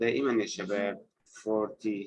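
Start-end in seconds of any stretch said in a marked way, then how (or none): 1.4-2.1 FOR in forty stressed, slightly softer delivery. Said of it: "نقوم بعمل stress على الجزء، الجزء الأول".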